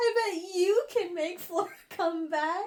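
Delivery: put-on sobbing voice. Retelling what the crying girl said after Eli smiles: imitating someone crying harder. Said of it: "crying even harder".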